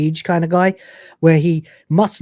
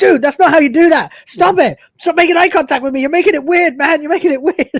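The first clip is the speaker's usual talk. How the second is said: put-on high, rattled-off, very fast freaked-out outburst; 12 semitones higher, 5 dB louder than usual. Retelling a scene where a coworker reacts: imitating someone freaking out. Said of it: "completely freaking out".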